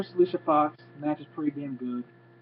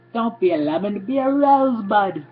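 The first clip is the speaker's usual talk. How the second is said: very slow, high, drawn-out, awful put-on British accent; 6 semitones higher, 7 dB louder than usual. Quoting a wrestler's catchphrase in a horrible British accent. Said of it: "a horrible British accent".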